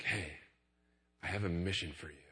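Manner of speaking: hushed, very quiet secretive half-whisper. Retelling calling Simon over during a game, retelling a quiet half-whisper. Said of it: "I started whispering real quiet".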